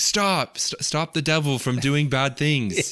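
high-pitched mock yell with a stumble. Retelling a scene where he yells at a hand: imitating someone yelling. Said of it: "yelling at the hand and he's like".

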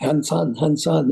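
ordinary talk

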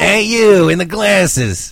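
dragged-out high drawl. Retelling the live performer on the ride: imitating Roz. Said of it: "Roz is at the end of the Monsters Incorporated ride".

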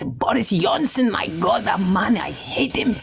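put-on hot, irritable, aggressive, angry Spanish accent. Asked to impersonate mum, imitating mum, Spanish, angry and irritated. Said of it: "she like this, Spanish, um, kind of a little bit aggressive and angry".

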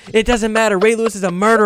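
repeated, high, insistent, accusing scream. Retelling a girl who kept screaming at him while he celebrated a win: imitating someone screaming. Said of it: "She kept screaming".

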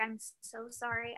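whispering voice. Retelling waking someone very early to ask for help, retelling a whisper. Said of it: "did you whisper thinking that would make a difference".

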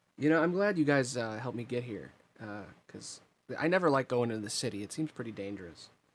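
plain

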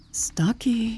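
soft, hushed, gentle cooing voice. Narrator reads a woman calling toward a rustling in the bushes, cooing softly. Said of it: "she cooed softly".

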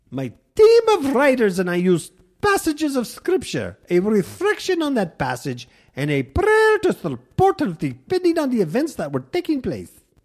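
put-on very high, lilting, sing-song Irish accent. Reading out a quote from Reverend Shalady, Irish accent as Shalady. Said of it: "Sounds Irish".

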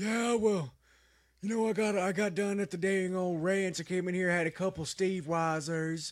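raspy wrestler voice. Quoting what a wrestler says when he gets in there, raspy wrestler impression. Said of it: "they're sounding a little raspier".

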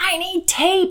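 high put-on child shout.

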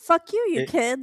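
put-on British accent, very loud, high, drawn out. Picturing Graham kicking a kid and shouting: imitating Graham in British accent. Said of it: "British accent".

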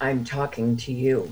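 play-acted contemptuous, put-out, slow, disgusted tone. Retelling a first chat with a phone assistant: imitating a disgusted answer. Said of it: "she very disgustedly answered".

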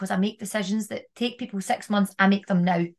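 plain

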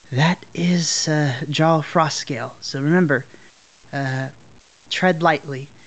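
whispered mutter under the breath. A character warns his companions before the jarl's throne, whispering under his breath. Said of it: "kind of whispers".

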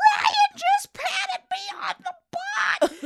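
very high, loud, squealed-out cry, acted out. Speaker retells what she squealed out when she was young, retelling a squeal. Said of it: "I even squealed out something like".

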